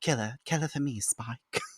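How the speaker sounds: put-on English accent. Recapping an episode, speaker quotes Drusilla asking Spike to kill the Slayer, Drusilla English accent. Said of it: "I almost want to do the English accent".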